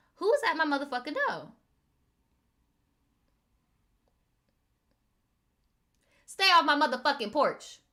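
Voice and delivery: aggressive, confrontational, combative attitude. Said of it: "I be doing the [name]".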